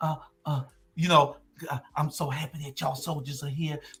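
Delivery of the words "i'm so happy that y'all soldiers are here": very quiet half-whisper throughout. Retelling what a friend said at a restaurant meeting: imitating Estella half-whispering. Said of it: "Estella was whispering".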